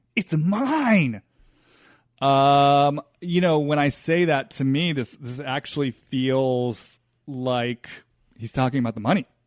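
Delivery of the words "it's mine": mock-angry shout, much higher pitch. Describing an inner voice while looking at him, acting out an angry shout. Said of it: "it's so angry".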